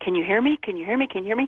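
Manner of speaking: plain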